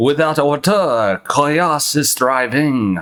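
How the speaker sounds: put-on French accent. Reading out a french man's words in a put-on french accent. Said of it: "if I could go back into my French voice".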